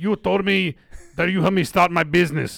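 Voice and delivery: put-on Russian accent, put on. Imitating a woman from Russia, retelling her words, Russian accent. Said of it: "this is how she's talking".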